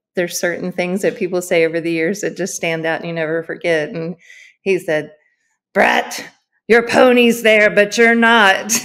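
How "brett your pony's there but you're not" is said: big, loud, gruff, intimidating voice. Recalling an unforgettable line someone said; imitating Robert's gruff voice. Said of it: "big, gruff, intimidating voice".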